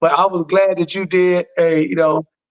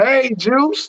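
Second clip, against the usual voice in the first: put-on high, little old lady voice; 7 semitones higher than usual. Riffing on a tv commercial with another speaker, imitating a little old lady.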